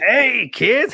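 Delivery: voice pitched way up high. Announcing the next figure in a toy lineup, in Krusty the Clown voice. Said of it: "that is an incredible Krusty the Clown impression".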